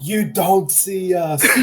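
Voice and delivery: shouting. Role-playing, the speaker's character shouts at those who spotted them, shouting. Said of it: "I'm going to shout at them".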